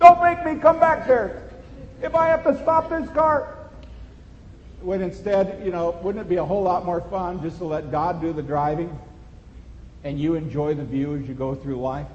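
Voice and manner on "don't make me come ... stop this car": high-pitched, loud yelling. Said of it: "yelling at him like we yell with our kids".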